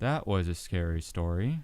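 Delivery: flat storyteller voice. Retelling an R.L. Stine segment to the others, monotone R.L. Stine impression. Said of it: "He's so monotone".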